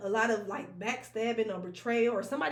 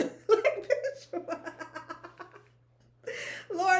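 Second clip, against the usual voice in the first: talking through laughter, higher pitched; 8 semitones higher than usual. Reacting to an imagined insult during a card reading, laughing while talking. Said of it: "let me stop laughing".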